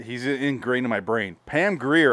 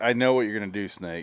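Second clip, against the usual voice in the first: put-on sarcastic villain voice; 3 dB quieter than usual. Comparing two actors' villain performances, mock-sarcastic Lee Van Cleef impression. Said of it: "he almost had like a weird sarcastic tone to him".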